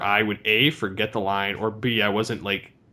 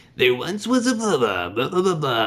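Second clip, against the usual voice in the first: smooth, effortless put-on voice, higher, flowing; 5 semitones higher than usual. Retelling doing a voice while reading a blank sheet: Casey Kasem voice. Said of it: "and so I did Casey Kasem".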